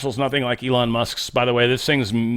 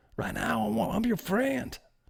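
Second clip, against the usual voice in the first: put-on Southern politician voice, higher and quieter; 9 semitones higher, 10 dB quieter than usual. Imitating Zuckerberg talking to Trump, in a Bill Clinton voice. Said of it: "I'm making him sound like Bill Clinton".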